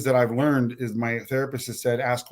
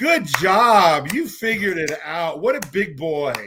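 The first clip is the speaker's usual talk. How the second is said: condescending, sarcastic fake praise tone, "job" drawn out; 4 semitones higher, 4 dB louder than usual. Recounting her reaction when he came back for his forgotten drill, imitating her sarcastic praise. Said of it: "starts sarcastically clapping her hands and goes".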